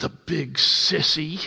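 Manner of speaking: hushed muttering under the breath. Retelling what he said under his breath as she left the room, muttered under breath. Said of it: "under his breath saying".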